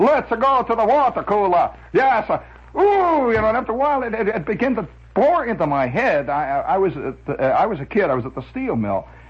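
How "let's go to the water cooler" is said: put-on phony Italian accent, higher pitch. Quoting a guy from the steel mill who faked an accent: phony Italian accent. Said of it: "the world's phoniest Italian accent".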